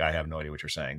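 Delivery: normal talking voice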